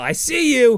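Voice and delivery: high-pitched, shouted character yell. Telling a made-up story, voicing a character with X-ray vision: acted-out yell. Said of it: "And he's gonna yell".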